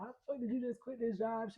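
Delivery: put-on furious, mad, angry demanding tone. Retelling how a mother reacted to quitting a job: imitating an angry mom. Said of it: "she would be mad as fuck".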